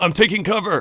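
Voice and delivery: yelled out high and loud.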